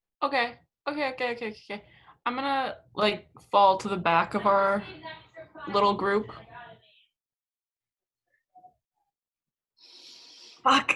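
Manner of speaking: panicked, swooping, freaked-out, flailing babble. A character moving with a group trying not to blow their cover, freaking out. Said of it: "why are you freaking out?".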